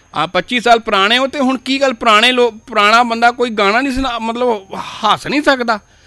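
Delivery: high, loud, teasing mock disbelief.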